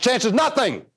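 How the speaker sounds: fast, run-together delivery. Quoting a man who repeats a phrase faster each time, saying it faster.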